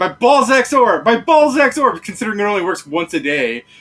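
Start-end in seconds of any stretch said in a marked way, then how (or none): 0.0-2.0 very loud, drawn-out, high screaming holler. Picturing a player going around the middle of town: imitating someone screaming. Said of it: "he's just screaming it out for fun".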